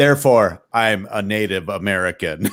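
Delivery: deliberate, deep, slow, proclaiming voice. Retelling a keynote speech by Charlton Heston: Charlton Heston deep voice. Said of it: "with his, you know, deep voice".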